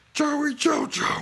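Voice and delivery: very high-pitched cartoon voice. Slipping into a Barney Gumble voice by mistake: Barney Gumble voice. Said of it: "that was, uh, Barney Gumble from, uh, The Simpsons".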